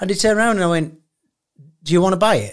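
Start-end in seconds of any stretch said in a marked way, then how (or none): 1.8-2.5 imitated laughing, half-joking, half-serious tone. Retelling offering strangers the car: retelling a laughing, half-serious offer. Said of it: "I said it, like, laughing, but, uh, half serious".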